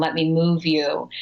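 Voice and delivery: ordinary delivery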